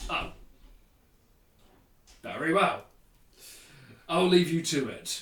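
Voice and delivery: put-on very thick Cockney accent, laid on heavily. Voicing Xanathar in a campaign, ending a talk with a player; Xanathar with very Cockney accent. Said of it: "giving Xanathar a very Cockney accent".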